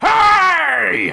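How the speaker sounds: very high, rough, drawn-out bellowing shout. A narrator voices a one-legged creature calling out, with a bellowing shout. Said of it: "its voice bellowing".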